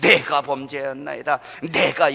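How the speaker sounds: strong emphasis landing on 내가. Reading Saul's words from scripture, stress on 내가. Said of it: "나 이거 나올 때 강조해서 읽었는 줄 아세요?".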